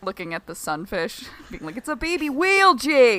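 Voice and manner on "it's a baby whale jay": put-on Boston accent, higher and louder. Imitating men on a boat looking at a sunfish: put-on boston accent. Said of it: "talks about the Boston accent".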